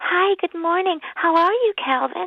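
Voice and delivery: daft, goofy voice, high-pitched and drawn out. Retelling a film scene, the future mother waking him: imitating a silly voice. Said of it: "Die hat so eine bescheuerte Stimme".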